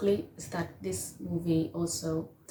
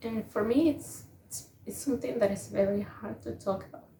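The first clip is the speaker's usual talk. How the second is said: halting, overcome, barely able to speak; 3 semitones higher than usual. Giving closing words on a film about a father and daughter, struggling to speak. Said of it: "can't speak".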